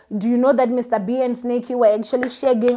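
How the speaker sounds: plain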